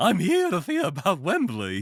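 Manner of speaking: high, loud character voice with swooping, swinging pitch. Voicing the character Edwin, speak in a Mad Hatter voice. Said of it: "That is a good voice for a Fraggle Doctor".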